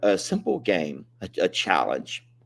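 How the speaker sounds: choked-up, halting voice with long pauses.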